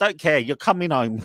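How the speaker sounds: mock, imitated shouting and yelling. Retelling how a mother dragged her nineteen-year-old son home, retelling a mother's shouting. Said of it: ""Please don't shout!"".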